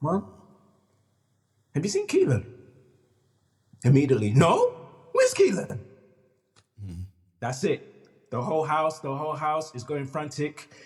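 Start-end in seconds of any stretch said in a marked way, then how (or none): 0.0-2.5 tender, careful, gentle voice, pitched up. Retelling how they asked their mother about the missing boy: retelling a soft question. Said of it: "I try to do it in the softest way possible".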